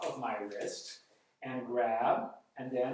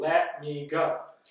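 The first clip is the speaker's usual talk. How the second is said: firm, assertive, raised voice; 7 dB louder than usual. Demonstrating how to avoid conflict, with eye contact and a firm raised voice. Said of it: "with eye contact and firm voice, you can even raise your voice".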